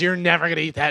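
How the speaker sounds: imitated angry voice. Retelling his wife's complaint about a potato skin: imitating his wife being mad. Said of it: "And she was all mad about it".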